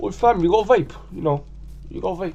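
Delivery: roadman street slang voice, pitched very high. Describing the young kids at the park who don't approach you: roadman impression. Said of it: "that was my impression of a roadman".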